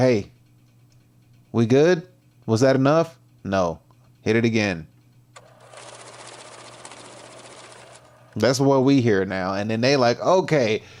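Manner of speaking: ordinary talk, nothing marked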